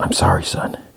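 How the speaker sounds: hushed, very low, quiet murmur. Retelling a scene between two people, said quietly. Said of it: "quietly he's like".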